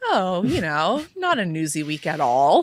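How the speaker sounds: dry, ironic, sarcastic sing-song tone. Answering a co-host about a busy week: sarcastic. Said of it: "we're being extremely sarcastic".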